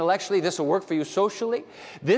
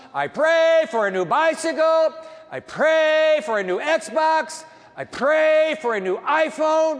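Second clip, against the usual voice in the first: put-on very high, very slow bellowed shouting; 9 semitones higher, 5 dB louder than usual. Telling a joke, voicing a boy praying at the top of his lungs. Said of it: "began praying at the top of his lungs".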